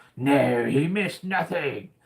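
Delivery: cartoonish villain voice. Welcoming a late joiner in animated-series style, answering as Cobra Commander voice. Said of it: "Did he miss anything, Cobra Commander?".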